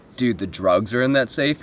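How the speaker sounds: ordinary talk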